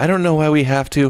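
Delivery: very loud, breathy and irritated voice. Imitating a woman who breathed into the mic during a dramatic pause, imitating a breathy pissed-off woman. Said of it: "when she was doing her dramatic pause".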